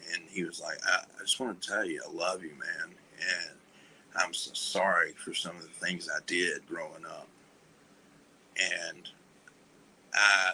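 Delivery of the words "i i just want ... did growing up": on the verge of tears, sincere, heartfelt. Retelling a goodbye talk, imitating someone almost crying. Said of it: "he almost started crying".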